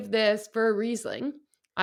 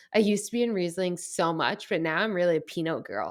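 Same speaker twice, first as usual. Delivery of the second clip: ordinary talk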